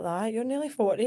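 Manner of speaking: dead sarcastic, mock-teasing tone. Retelling the dad's teasing at a race: imitating a sarcastic tone. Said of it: "he's dead sarcastic and he'll be like".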